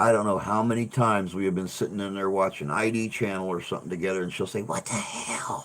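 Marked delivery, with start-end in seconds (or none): 4.6-5.7 hushed, soft, breathy puppet voice. Retelling Steph reacting while they watch TV together, in Peanut puppet voice. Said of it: "You sound just like Peanut".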